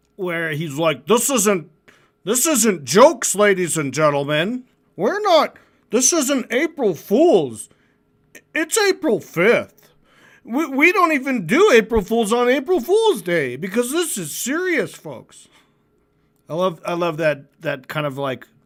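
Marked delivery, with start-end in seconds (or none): 1.1-15.5 dorky, pitched-up, mock dead-serious voice. Describing how a man he's talking about spoke, imitating a dorky guy. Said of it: "had a really like dorky fucking vibe".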